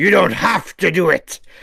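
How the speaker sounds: gruff put-on voice. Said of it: "Says Killian".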